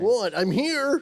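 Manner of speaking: very high-pitched frog-like voice. Answering the others while being told to talk more like Kermit: Kermit voice. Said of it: "as long as you're talking like Kermit".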